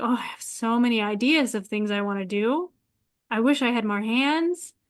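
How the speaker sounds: ordinary delivery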